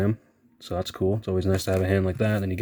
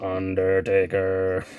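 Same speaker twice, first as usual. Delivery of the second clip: put-on robotic voice. Showing how the wrestler talked through a voice box: imitating Kane's robot voice. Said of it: "he would talk like a robot and just talk like this".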